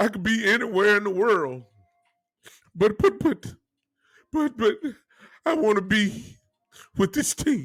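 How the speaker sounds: mock sobbing, stammering, stuck on "but". Imitating an interviewee answering through tears: imitating Jerry Jones crying. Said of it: "I ain't never seen Jerry cry so much".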